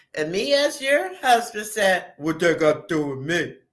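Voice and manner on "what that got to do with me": put-on deep voice, lower pitch, faster. Role-playing a husband's reply to his wife, in a put-on deep voice. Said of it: "listen to your deep ass voice".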